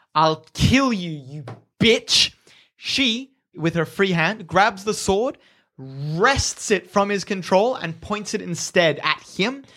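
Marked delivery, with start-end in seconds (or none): 0.2-2.4 vicious, menacing snarl. As he drags her onto his sword, he snarls at her: snarling. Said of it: "he snarls at her".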